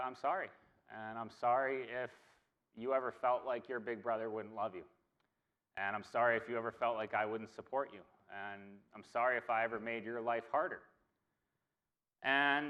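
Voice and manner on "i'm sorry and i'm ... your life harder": usual speaking voice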